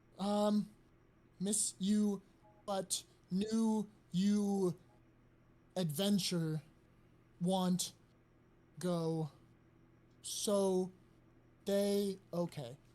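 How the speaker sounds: very slow, halting, stammering bird creature voice. A bird delivering a message tries to remember what he was told, in a stuttering bird voice. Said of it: "he kind of stutters for a second".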